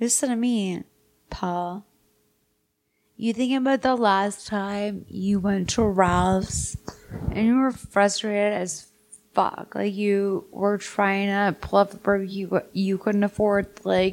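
put-on whisper. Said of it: "He whispers in your ear".

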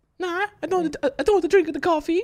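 put-on Swedish accent.

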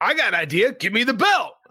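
play-acted, blunt, mild half-yell. Retelling a famous wrestling story about an argument: imitating someone yelling. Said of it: "he just yelled at him like that".

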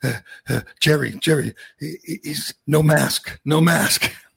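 put-on slow, nervous, scared child voice. Retelling what the frightened three-year-old told his father: imitating a nervous, scared child. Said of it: "nervous and scared".

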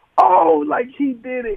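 mock very high screaming yell. Retelling watching a 42-yard touchdown pass happen, retelling own screaming. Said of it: "So I'm screaming like".

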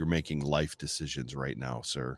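stern fatherly dad voice. Retelling confronting a drunk fan near his daughter: retelling own dad warning. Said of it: "that's dad telling you it's about to be bad".

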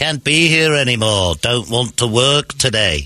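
put-on slow Liverpool accent.

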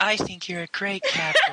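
high, swooping, sing-song fangirl gush. Retelling a scene where Ping speaks to the captain: Ping's fangirling voice. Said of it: "why did your voice change just then?".

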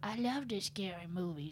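tiny, very quiet, hushed, creepy stalker voice. Between votes to save players, the speaker does the tiny stalker voice. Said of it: "got you to do the tiny stalker voice".

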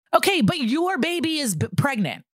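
high, frustrated, exasperated shouting. Speaker argues with a co-host and then admits to yelling at them, yelling. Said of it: "i'm yelling".

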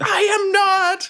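very high, shrieking goblin creature scream. Narrating the game, the speaker answers a player as the goblin: screaming goblin. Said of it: "The goblin screams".

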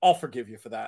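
very low, dead-flat, put-on deadpan delivery. Speaker told Kevin McReynolds he's a lifelong Mets fan, retells reply; retelling Kevin McReynolds' deadpan. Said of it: "looked at me very deadpan and said".

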